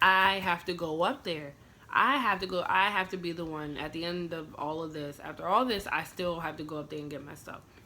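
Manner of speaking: ordinary talk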